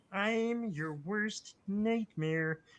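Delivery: high, frog-like puppet character voice. Asked by another speaker to do a line as Kermit the Frog. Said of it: "do Kermit saying".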